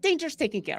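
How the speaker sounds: high, voiced stage half-whisper. Playing a character telling companions the danger is handled: half-whispering. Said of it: "I still whisper".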